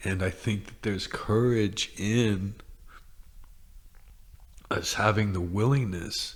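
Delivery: tearful, crying while talking. Talking about courage on a podcast, crying while talking. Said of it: "I can't believe I'm crying".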